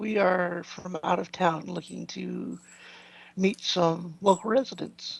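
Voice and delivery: very hushed, quiet, discreet murmur. In a role-play game, a character speaks to a woman, speaking very quietly. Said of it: "I'm going to say very quietly to her".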